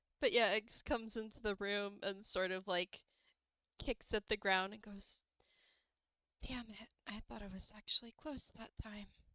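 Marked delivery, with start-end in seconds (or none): 6.5-9.1 barely-there, very quiet, hushed voice. Voicing a character who kicks at the ground: very quiet voice. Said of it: "this man's voice has two settings, quiet and quieter".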